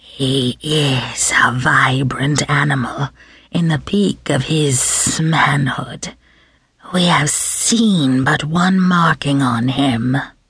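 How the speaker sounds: appreciative, approving murmur with hissing, sibilant esses. Narrator reads the observer judging the superior specimen: sibilant approving murmur. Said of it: "murmured approvingly in his sibilant voice".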